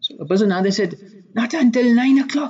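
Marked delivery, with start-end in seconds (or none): 1.3-2.5 mock high, panicked, stressed-out blurt. Retelling a caller answering an upset librarian, acting out stressed panic. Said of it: "like in stress panic mode".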